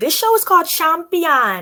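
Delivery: slight bad Jamaican accent. Introducing a show to listeners, slight bad Jamaican accent. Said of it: "I'm trying to give you a little Jamaican accent".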